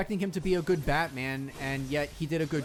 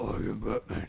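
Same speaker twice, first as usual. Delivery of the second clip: put-on low, gravelly superhero voice; 7 semitones lower than usual. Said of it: "his voice as Batman got worse".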